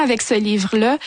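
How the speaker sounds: normal talking voice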